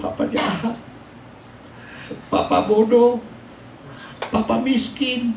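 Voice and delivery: high, tearful pleading through tears.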